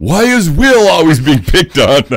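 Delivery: shrill, very high, loud pirate holler. Retelling a pirate's joke during a battle, imitating a pirate yelling. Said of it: "pirates yells".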